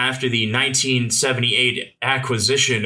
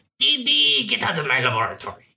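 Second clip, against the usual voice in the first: put-on French-accented cartoon kid voice, much higher pitch; 9 semitones higher than usual. Joking about a script's laboratories, doing a Dexter impression. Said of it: "Why'd you make him so French?".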